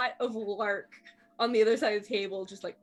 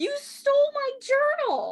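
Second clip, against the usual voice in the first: very high, drawn-out, deeply upset voice; 6 dB louder than usual. Voicing an upset character confronting the players: very upset character. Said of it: "she looks at you guys and she's very upset".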